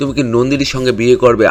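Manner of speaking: ordinary talk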